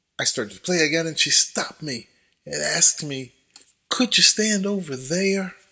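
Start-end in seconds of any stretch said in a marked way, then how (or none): 3.9-5.5 put-on heavy, laid-on Southern US accent. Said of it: "said with a very strong Southern accent".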